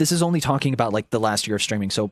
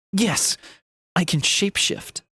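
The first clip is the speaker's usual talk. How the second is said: put-on exaggerated, cringey sincerity, pitched up, overly earnest; 7 semitones higher than usual. Recalling her own cringy line about shapeshifting: mock overly earnest delivery. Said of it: "I say that with like such a cringy ass delivery".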